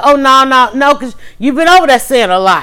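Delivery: ordinary talk, nothing marked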